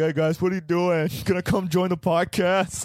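goofy dumb dog voice. Podcast host voices their rescue dog sitting nearby: dumb dog voice. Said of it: "this dumb voice".

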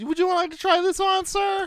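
high, chirpy, pushy mock salesclerk voice.

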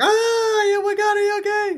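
very high, shrill, panicky, frantic freak-out. Retelling a girlfriend's reaction to crash photos: imitating someone freaking out. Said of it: "She freaks out".

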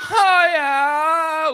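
acted-out loud yell. Recalling what he did during her hard contractions, retelling a loud karate yell. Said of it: "I would do it as loud as I could".

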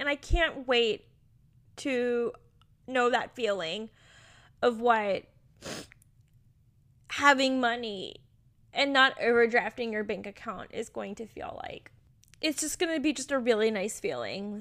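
crying while speaking. Speaker telling listeners about hopes of financial comfort, crying while speaking. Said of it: "Sorry for crying".

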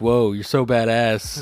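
put-on sarcastic tone. Retelling a cousin's comment on a Facebook photo: imitating Erica's sarcasm.

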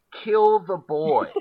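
savage, very loud, high-pitched scream. Describing a film scene, voicing the circus guy's line, retelling a scream. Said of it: "the circus guy screams".

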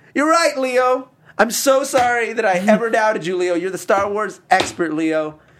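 shrill, very high, loud shouting. Playing the role of Keaton answering Leo, imitating Keaton shouting. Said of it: "Why are you shouting".

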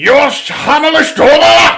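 high, loud, slow fake German accent, with conviction.

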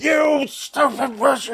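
put-on, very high-pitched, flying-off-the-handle furious rage. Retelling how the doll suddenly starts cursing: imitating Chucky flying off the handle. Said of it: "he flies off the handle".

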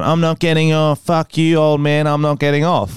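ordinary talk

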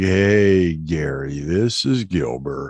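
low, calm, unhurried voice. Retelling a voicemail left for producer Gary: imitating Gilbert Gottfried's deep, calm real voice. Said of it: "real deep voice, real calm".

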